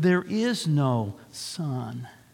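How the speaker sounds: solemn, very slow and weighty. Narrator reading the witch's repeated line to the others, slow and grave. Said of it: "Slowly and gravely, the witch repeated".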